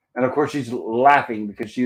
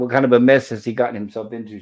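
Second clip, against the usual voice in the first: plain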